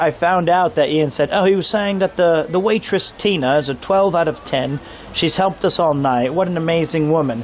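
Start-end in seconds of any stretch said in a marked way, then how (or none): none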